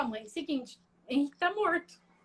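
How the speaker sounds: ordinary talk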